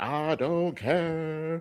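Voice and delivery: high, very nasal, grating voice. Mimicking a woman seen in the show preview, mocking her nasal, grating voice. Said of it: "it's the nasally, it's the most grating voice".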